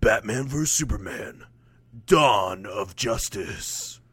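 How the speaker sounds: very slow, bad movie trailer announcer voice. Imagining the film title read by a trailer announcer: movie announcer voice. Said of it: "like the movie announcer guy just being like".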